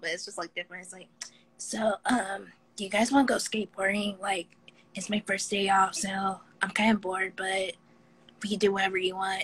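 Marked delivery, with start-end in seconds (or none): 1.6-9.4 cartoon anime kid character voice. Showing off the voices they can do, here an anime kid voice. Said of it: "I could do like an anime kid voice".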